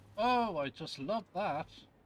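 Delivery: openly sarcastic, high-pitched and loud. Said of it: "He said sarcastically".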